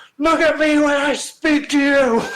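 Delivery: very high, booming, loud bellow. Narrator telling how a fan yelled at a man who didn't look up, bellowing. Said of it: "she bellowed".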